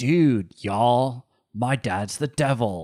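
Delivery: every word stretched out slowly and lazily. Mocking an actor's bad accent in a film: Keanu Reeves impression. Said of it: "with Keanu Reeves, he's just like".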